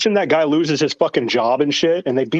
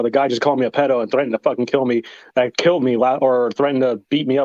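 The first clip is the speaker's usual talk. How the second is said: ordinary talk, nothing marked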